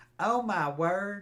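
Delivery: put-on high, loud female Mississippi Southern accent. Showing the female Southern accent: imitating a Southern woman's accent. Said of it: "the female accent is a little bit different".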